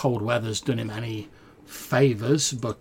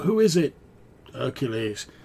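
put-on worn, ragged old man's voice; 3 semitones higher than usual. A game narrator voices an old man calling from inside a tent; ragged old voice. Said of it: "a slightly sort of ragged old voice".

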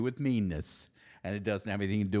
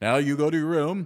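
very loud, nasty, stern, mean voice; 6 semitones higher, 8 dB louder than usual. Showing how people talk when being mean to someone, mean voice. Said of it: "You've heard my mean voice".

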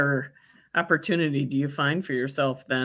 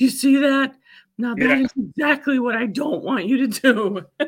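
mock near-tearful voice, higher and louder; 10 semitones higher, 5 dB louder than usual. Retelling how a teacher scolded Frazier for overreacting: imitating someone almost crying. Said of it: "she's almost crying".

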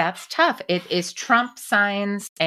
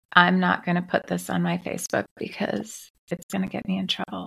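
hushed, confiding whispered aside. Answering an interviewer's question, who notes the whisper: whispering. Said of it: "you're whispering again".

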